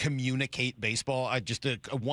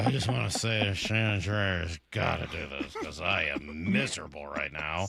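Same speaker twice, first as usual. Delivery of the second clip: put-on depressed voice, pitched lower; 7 semitones lower than usual. Reading out a listener's message as the listener: imitating Anthony sounding depressed. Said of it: "He sounds depressed".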